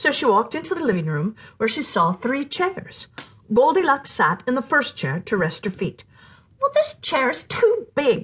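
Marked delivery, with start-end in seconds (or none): 6.6-8.2 high, exclaimed, storybook-style delivery. Goldilocks sits in the first chair to rest her feet, exclaiming. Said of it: "she exclaimed".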